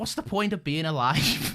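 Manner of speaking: Liverpudlian Scouse accent. Asked to say a line for the podcast, in a liverpool accent. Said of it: "what do you want me to say in Liverpudlian?".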